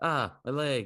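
acted yelling in pain. Speaker retells waking up at night yelling to his wife, retelling a pain yell. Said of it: "I'm just like yelling".

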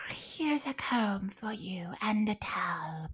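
storybook talking cat voice. Reader voicing the cat in a story read aloud, cat voice. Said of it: "said the cat".

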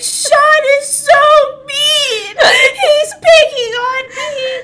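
mock wailing sobs, high, loud, slow and drawn-out. Telling a story about wearing an elephant costume, the speaker re-enacts own past bawling. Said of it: "I started bawling my eyes out".

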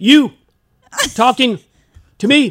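high, very loud shouting like a dubbed film. Retelling facing a school bully, imitating Bruce Lee dubbed voice. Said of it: "I was doing my mouth just like that".

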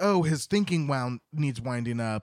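ordinary talk, nothing marked

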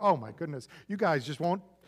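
mock snarky, sarcastic, sassy teenager voice. Acting out a teenager's reply to the Pharisees: imitating a sarcastic teenager. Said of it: "That's a teenager going".

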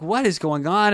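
ordinary delivery

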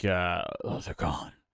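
low-volume, husky, hushed whisper. Imitating someone who was always huskily whispering: husky whisper. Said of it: "he's just always whispering, like huskily whispering".

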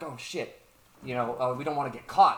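ordinary talk

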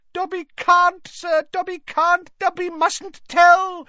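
very high, loud squeal. Narrator reads Dobby the elf's answer when pressed with questions, squealing. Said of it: "squealed the elf".

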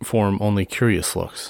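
ordinary delivery

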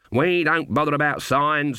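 ordinary delivery

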